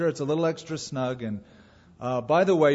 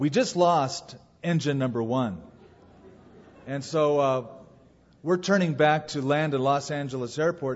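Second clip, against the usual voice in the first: usual speaking voice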